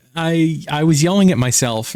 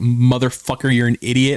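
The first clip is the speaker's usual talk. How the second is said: ordinary talk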